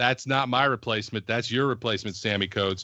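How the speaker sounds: ordinary talk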